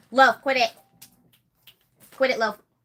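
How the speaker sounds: loud, angry, yelled scolding tone. Telling someone off camera to quit it: yelling. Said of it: "I'm gonna yell".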